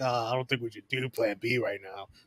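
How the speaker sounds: salty, mad, annoyed grumbling mutter. Retelling how Damien reacted when Plan B came up; mock-salty Damien impression. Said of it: "but now Damien's all salty, all mad, like".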